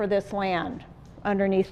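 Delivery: ordinary delivery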